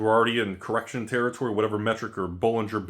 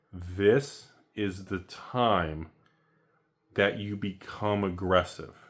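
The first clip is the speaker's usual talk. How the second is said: a little slowed down; 2 semitones lower than usual. Repeating the point one more time for the people in the back, a little slower. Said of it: "a little slower".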